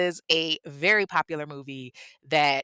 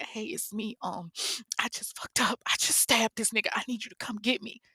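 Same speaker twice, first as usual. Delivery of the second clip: put-on breathy, tearful whisper through crying; 7 semitones higher, 6 dB quieter than usual. Retelling a woman's phone call after a stabbing: imitating someone crying. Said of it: "And she's crying".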